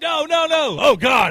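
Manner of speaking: very slow, loud, high, stretched-out shouted cry. Retelling the ref's reaction to the shot: imitating the ref shouting. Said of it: "the ref is like".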